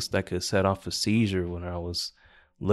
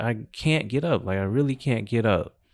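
imitated yell; 2 semitones higher than usual. Retelling yelling at a teacher while stuck on the floor: imitating own yelling. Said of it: "I was yelling at this lady".

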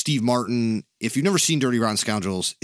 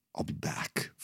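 whisper breathed out under the breath; 8 semitones lower, 13 dB quieter than usual. Quoting a famous movie line: Terminator voice. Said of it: "Like, the Terminator".

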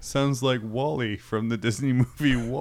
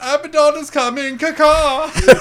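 very high, loud, shrill, bad squawking bird voice; 10 dB louder than usual. Voicing a character as an albatross, in a bad albatross voice. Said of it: "that was the worst albatross I've ever heard".

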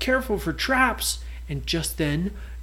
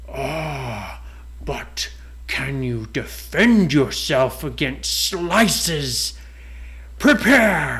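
low, slow dragon voice, long drawn-out "ah"; 4 semitones lower than usual. Reading a story aloud, the narrator voices the door dragon speaking to pirates. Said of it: ""Yes, I am a door. I'm not a real dragon, but I have been enchanted with magic so that I can move and I can talk to people who want to enter / And the castle was shaped kind of like a dragon's head. T".

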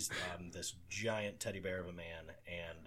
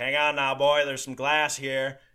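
put-on very loud, high-pitched Texas accent; 8 semitones higher, 18 dB louder than usual. Retelling how a big man lifted him over broken glass: imitating Pete's Texas accent. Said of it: "in a Texas accent".

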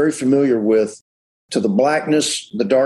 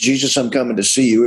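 ordinary talk, nothing marked

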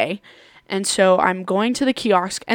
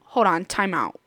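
ordinary talk

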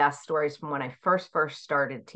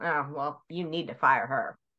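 put-on sassy child voice. Retelling a student's reply to the principal: imitating a sassy child.

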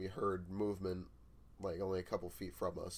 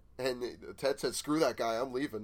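normal talking voice

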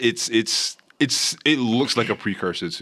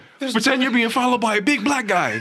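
sudden, very high shouted yell; 13 semitones higher, 4 dB louder than usual. Describing a show scene, the speaker quotes the main character, retelling a yell. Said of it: "he yells out".

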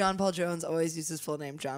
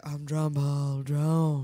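slow delivery with every word drawn out; 3 semitones lower than usual. Mocking how a show contestant introduces himself: John Paul Jones impression. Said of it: "The way he says it, he's like".

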